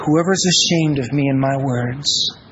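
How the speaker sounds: almost whispering. Quoting Him as He lowers His voice to make His point: retelling in a near whisper. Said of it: "almost in a whisper".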